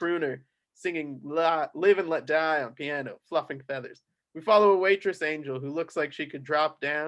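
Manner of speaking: ordinary delivery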